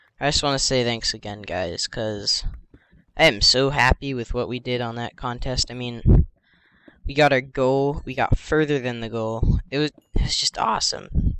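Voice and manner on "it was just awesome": voice breaking mid-word on "awesome". Thanking the guys for the contest result, voice cracking. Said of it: "Voice crack".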